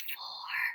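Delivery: whispering. Counting along with the listener as items go on, the speaker whispers the number. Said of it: "Whisper count".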